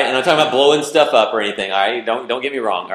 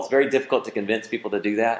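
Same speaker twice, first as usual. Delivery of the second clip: normal talking voice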